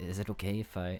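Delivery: quiet half-whispered voice. Voicing a character asking to stay close for safety: half-whispering. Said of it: "she kinda whispers to you".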